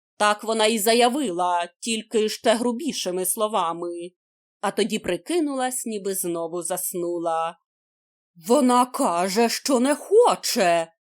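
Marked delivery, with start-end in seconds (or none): 8.4-10.9 slow, stunned, shocked exclamation. A narrator reads a character's shocked exclamation, exclaimed in shock. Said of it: "вигукнув Хвалько, вражений".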